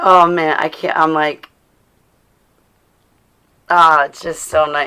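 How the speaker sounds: voice choking up, fighting back tears. Speaker responding to Brooke, choking up. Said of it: "I can feel it in my throat".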